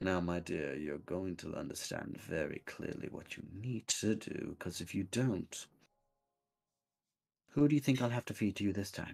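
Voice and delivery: low, menacing character voice. Showing how the character sounded when threatening: deeper threatening Crumble Bottom voice. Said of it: "whenever I got threatening with it, I got deeper".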